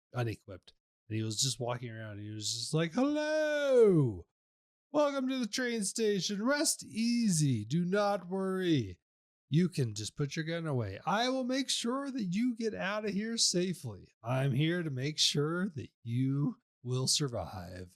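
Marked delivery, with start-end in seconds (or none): 2.9-17.9 slow, raised welcoming voice, "hello" drawn out. Retelling what a guy at the train station said to arrivals: acting out his welcome spiel. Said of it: "And he's just doing a whole spiel".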